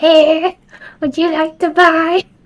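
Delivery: put-on creepy, spooky old hag voice, high and slow. Mocking creepy German voice lines, in a spooky East German hag voice. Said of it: "spooky East German hag vibes".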